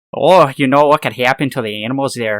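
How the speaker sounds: very loud, over-the-top, exaggerated Minnesota accent. Redoing a line just said, exaggerated Minnesota accent. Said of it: "I had, like, a Minnesota accent there".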